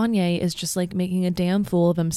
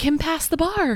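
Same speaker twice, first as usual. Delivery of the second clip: put-on, very high, sudden blurted yelp; 9 semitones higher than usual. Retelling seeing the news on Instagram, acting out your exclamation. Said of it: "I immediately exclaimed".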